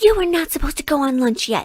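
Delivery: mock high-pitched angry scream at the top of the lungs. Retelling how the boss screamed at the speaker in the break room, imitating the boss screaming. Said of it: "he's like screaming at me on the top of his lungs".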